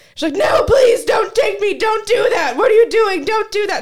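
acted-out yelling. Recounting the shouting in the car before a passerby looked in, retelling a yell. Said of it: "Starts yelling".

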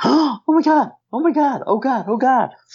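mock very high, drawn-out, alarmed, freaked-out cries. Talking to listeners on a microphone, imitating wife freaking out nearby. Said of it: "My wife's just freaking out".

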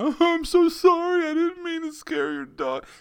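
exaggerated, very high, swooping bawling sobs. Describing how the dog incident could have gone instead, mock bawling apology. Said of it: "You could have started bawling and went".

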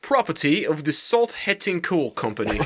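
fake, put-on English accent. Asked to do an English accent, a speaker repeats a bag's label, English accent. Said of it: "Maybe you should do an English accent".

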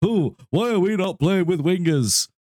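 very high-pitched, squeaky voice. Retelling complaints seen all over Twitter: impression of Jake. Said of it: "that was an impression of Jake".

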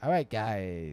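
each word pulled long and slow. Imitating the other speaker's old outros, stretched out: imitating Jagger's drawn-out outro. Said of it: "stretch them out real, real".

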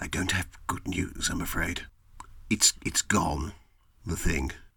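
secretive, low-voiced confiding. Mr. Peabody summons the player closer outside the tailor's, Mr. Peabody, lowered voice. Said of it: "lowers his voice".

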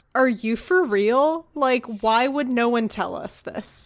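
ordinary delivery

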